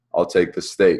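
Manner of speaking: stern, firm, authoritative, commanding grown-man voice. Retelling ordering food from a waitress: imitating his stern, grown-man voice. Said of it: "with a stern, grown-ass man voice".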